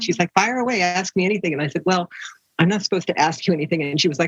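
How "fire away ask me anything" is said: put-on a touch of British accent. Retelling a car ride with a woman the speaker picked up: Jackie Bianchi's British accent. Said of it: "with that little British accent".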